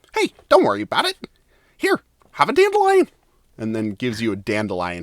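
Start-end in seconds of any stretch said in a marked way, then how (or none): 0.2-3.1 very high, swooping, sing-song little critter voice. Voicing a red squirrel who runs up to a player: voicing a red squirrel. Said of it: "the red squirrel ... runs up to you and says".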